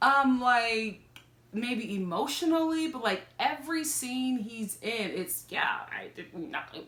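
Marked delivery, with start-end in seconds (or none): 5.5-6.7 put-on half-whispered, breathy Valley girl voice. Imitating how David talks in every scene: imitating David's Valley girl voice. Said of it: "Why are you talking like a Valley girl?".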